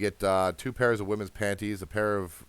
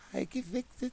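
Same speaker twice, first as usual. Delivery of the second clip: tiny, very high, barely audible squeak; 7 dB quieter than usual. Playing Shira for a moment as she offers to mend it, tiny squeaky Shira voice. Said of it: "the tiniest, quietest, almost squeaky voice".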